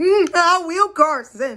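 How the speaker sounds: mock weepy, tearful, high, drawn-out crying. Retelling an episode scene with a blindfolded woman, imitating someone crying. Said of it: "crying like".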